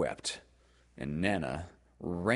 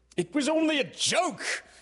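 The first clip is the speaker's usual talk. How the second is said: very high, booming, loud roaring bellow; 5 dB louder than usual. A father to his wife as she comforts the boys: roaring. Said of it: "he roared".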